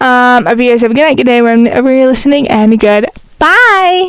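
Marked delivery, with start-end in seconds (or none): 2.5-4.1 high, little cat-like voice. Closing a podcast episode, signing off to listeners in the cat voice. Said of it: "Why did I say it in the cat voice?".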